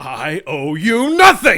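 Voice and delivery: very loud, furious, swooping angry yell. Reading the final line of a scripted scene with a partner, angry yelling. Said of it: "I like yelling".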